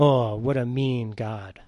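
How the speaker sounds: very slow, drawn-out, dry sarcasm. Calling god mean just after describing grace: sarcastic. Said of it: "I say that sarcastically".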